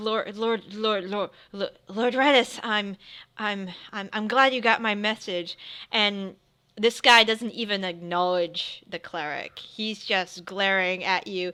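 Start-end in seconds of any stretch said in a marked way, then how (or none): 0.0-5.6 cowering, fearful, cringing stammer. A priest cowers as the lord arrives, cowering and stammering. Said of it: "the priest kind of cowers".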